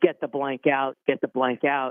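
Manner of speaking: usual speaking voice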